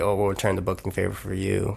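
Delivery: normal talking voice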